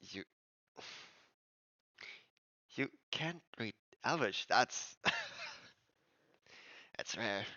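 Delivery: soft, hushed, under-the-breath whisper. Speaker retelling what a man whispered to him about reading Elvish, whispering. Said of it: "he whispers".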